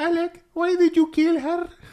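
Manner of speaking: put-on Spanish accent. Imitating the wife speaking with a fake Spanish accent. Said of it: "Rolls the R on her".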